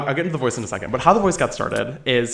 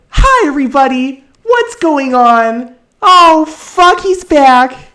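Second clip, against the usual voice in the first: strained put-on voice, very high, loud and grating; 13 semitones higher, 11 dB louder than usual. Showing the grating silly voice once used with a friend: grating annoying put-on voice. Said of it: "this very grating, annoying voice that, like, really pushes the voice box".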